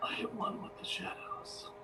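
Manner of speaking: very quiet, slow, hushed whisper. A role-playing game player, sneaking in character, whispering to oneself. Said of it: "I whisper to myself".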